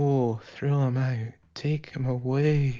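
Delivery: odd, slow, dragging, drawn-out drawl. Retelling how a character in Midnight starts talking at the ending: imitating her strange way of talking. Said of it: "she starts talking like this".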